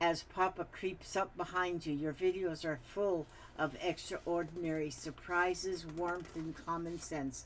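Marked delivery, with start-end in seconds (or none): none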